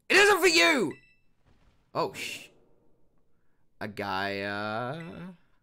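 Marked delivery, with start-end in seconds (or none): 0.1-0.9 loud shouting. Voicing a game character telling someone not to touch it: shouting. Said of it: "I shouldn't have shouted like that".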